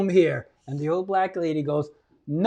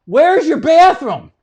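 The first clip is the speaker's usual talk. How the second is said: loud, high-pitched yell; 9 semitones higher, 7 dB louder than usual. Retelling running into a bar late at night, retelling a yell. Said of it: "I yell".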